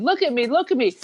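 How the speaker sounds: small, restrained, acted-out child's cry. Retelling a child on a swing set demanding attention, imitating a screaming child. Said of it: "he's just screaming".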